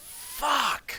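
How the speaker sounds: shrill, very high-pitched yell. Playing Egner getting hit, yelling in character. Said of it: "He will yell".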